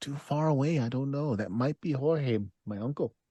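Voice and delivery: hushed, quiet half-whisper. Retelling how she half-whispered down to a companion about a stranger, imitating someone half-whispering. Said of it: "she whispers down to Ivan".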